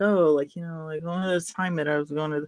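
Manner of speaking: half-muttered, mumbled ramble, words run together. Describing Lori's tell when she lies, the speaker acts her out; imitating Lori's mumble. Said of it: "she'll kinda, like, mumble a little bit".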